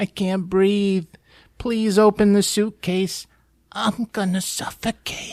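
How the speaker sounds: tiny, small, high-pitched little voice. Retelling a movie scene, voicing someone trapped in a suitcase: little voice. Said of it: "Little voice inside".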